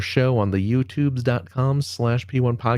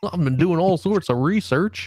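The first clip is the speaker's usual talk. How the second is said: fake Southern drawl, higher; 5 semitones higher than usual. Doing a put-on voice for the co-host, slipping into Southern accent. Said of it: "Now you're going into, like, a Southern accent".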